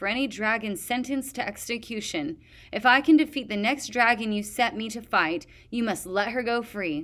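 ordinary delivery

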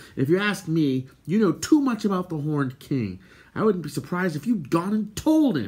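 angry, accusing tone. Answering a complaint about getting no thanks, he replies angrily. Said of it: "Terran replied angrily".

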